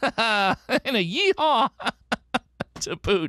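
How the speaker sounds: playful and goofy. Puzzle host confirms today's answer and adds a whoop, being silly. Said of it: "I'm being silly today".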